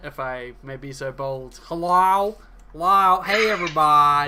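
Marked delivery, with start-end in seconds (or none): 1.6-4.3 teasing, mocking, very loud belted call-out. Teasing a player by imitating how their character greeted the group: mocking imitation of Oranus's greeting. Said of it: "your oh so accurate".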